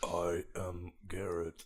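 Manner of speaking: soft, bad, put-on tree creature voice. During introductions, you show Garrett how to say his name, in a bad Groot impression. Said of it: "Say it like Vin Diesel, like your Groot".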